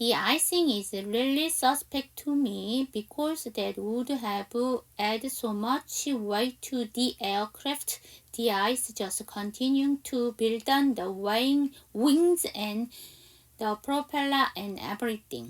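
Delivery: very slow, careful, deliberate read-aloud delivery. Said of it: "저랑 같이 한번 연습해봐요".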